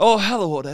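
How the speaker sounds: big cartoon movie ogre voice. Explaining the ogre meme voice to the other speaker: Shrek ogre voice. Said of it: "the Shrek".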